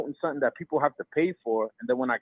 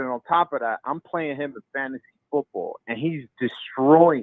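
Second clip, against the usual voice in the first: ordinary talk, nothing marked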